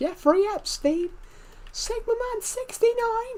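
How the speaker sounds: put-on high-pitched shout. Retelling what a viewer did in a video: imitating Decepted's high-pitched shout. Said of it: "did a high-pitched voice and shouted".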